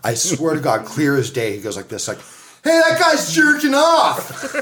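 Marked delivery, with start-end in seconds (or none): 2.6-4.5 put-on sudden carrying shout, pitched very high. Speaker retells Tony yelling through the glass: imitating Tony yelling. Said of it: "as loud as if he were just to yell in my fucking ear".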